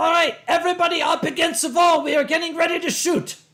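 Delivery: put-on loud shouting with a German accent. Voicing the call heard at a group photo; German accent, shouting. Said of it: "the sound of a German accented voice shouting".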